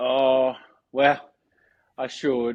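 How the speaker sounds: slow, sorrowful, sheepish, small voice. Answering whether one goes to the gym: sad. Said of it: "You sound so sad".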